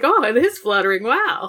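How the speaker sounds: thrilled, excited, swooping little-creature voice. Retelling Gamamon realizing the talisman flutters: imitating Gamamon excited. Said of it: "He's so excited".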